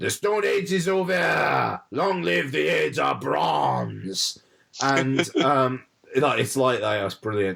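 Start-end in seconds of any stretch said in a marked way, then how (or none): 0.0-4.4 slow, drawn-out, thick put-on French accent. Retelling a line from a Tom Hiddleston film role: Tom Hiddleston's cod French accent. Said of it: "he's got this strong cod French accent".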